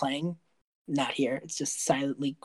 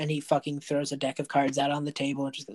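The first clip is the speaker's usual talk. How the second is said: normal talking voice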